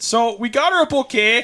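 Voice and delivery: put-on Midwestern accent pitched very high. Retelling own words as a theater senior giving directors gifts, Midwestern accent. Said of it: "and that's how I said it".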